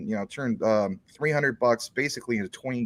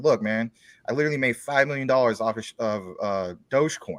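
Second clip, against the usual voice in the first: normal talking voice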